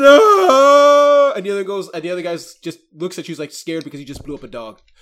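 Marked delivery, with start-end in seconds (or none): 0.0-1.3 very high, very loud, shrill, drawn-out tearful wail. Retelling a scene where one of the men breaks down, acting out a crying 'No!'. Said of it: "He begins to just tear and cry".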